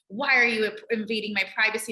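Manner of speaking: plain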